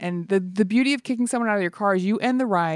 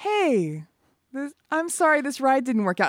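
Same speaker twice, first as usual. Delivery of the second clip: delighted, breezy, cheery, high sing-song delivery; 5 semitones higher than usual. Retelling how they apologized while kicking a passenger out: imitating a delighted apology. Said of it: "once I've decided to kick them out, I'm delighted".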